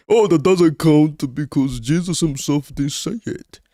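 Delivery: high, slow, drawn-out mocking whine, know-it-all tone.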